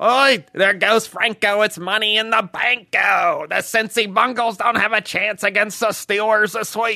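put-on thick Pittsburgh accent, high and loud. Showing another speaker how the late Steelers announcer sounded: Myron Cope impression. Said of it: "He sounds like this!".

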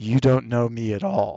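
mock grave, low, dead-serious delivery. Retelling a scene just watched, quoting Teddy: imitating Teddy, deadly serious. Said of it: "just deadly serious".

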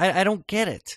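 boiling frustration. Complaining about an episode to the other speakers: getting mad. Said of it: "I'm just getting mad".

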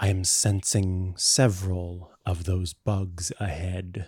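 very quiet. A player speaks in character during a game session; very quiet. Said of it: "very quietly says".

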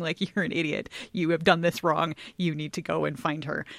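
plain

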